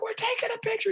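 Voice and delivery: shrill, very high shout. Retelling shouting to a hard-of-hearing relative at a photo: imitating a yell. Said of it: "I yelled at her".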